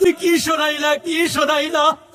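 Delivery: a high-pitched wailing cry.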